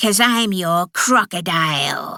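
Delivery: sibilant, hissed, sharp. Narrator reads a woman's reply to the narrator's question, hissing. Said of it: "she hissed".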